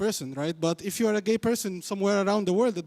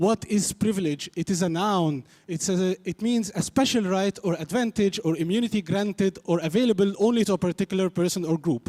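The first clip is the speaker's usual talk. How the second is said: normal talking voice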